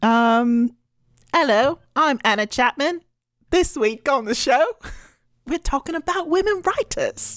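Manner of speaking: clumsy put-on British accent. A podcast host does the show intro as the co-host, imitating Anna Chapman's accent.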